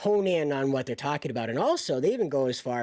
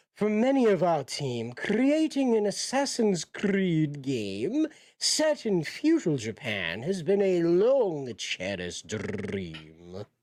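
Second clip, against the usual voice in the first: slow put-on British accent, "dream" drawn out; 3 semitones higher than usual. Speaker acts out what they say, in a British accent. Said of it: "I'm doing a British accent".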